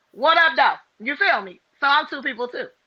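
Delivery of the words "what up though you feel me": casual, loose, slangy ratchet street voice. Showing a second voice after a customer-service greeting: ratchet voice. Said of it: "this is my ratchet voice".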